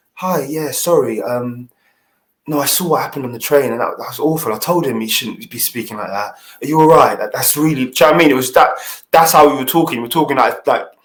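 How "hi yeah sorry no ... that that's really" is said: hushed, discreet, very quiet, low-key voice. Retelling how a man came over after the train incident: imitating someone speaking very quietly. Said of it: "He came over to me very quietly".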